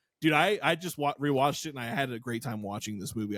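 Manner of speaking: ordinary delivery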